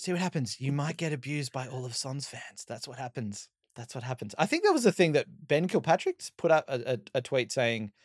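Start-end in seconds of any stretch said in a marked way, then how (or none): 0.0-4.4 put-on whisper, quieter. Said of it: "wind that's whispering all this wisdom".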